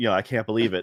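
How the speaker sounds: normal talking voice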